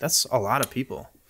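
ordinary talk

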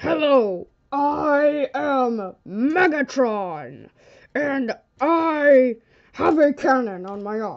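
loud, slow, odd voice with drawn-out I. On a pretend news show, Megatron is called in and introduces himself, in Megatron voice. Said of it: "Can you speak in a more normal voice?".

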